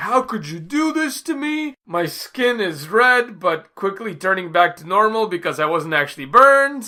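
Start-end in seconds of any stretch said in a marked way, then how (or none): 0.0-3.4 put-on high, drawn-out accusatory yell. Retelling how a scalded woman yelled at two others, retelling an accusatory yell. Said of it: "being very accusatory and just yelling at them like".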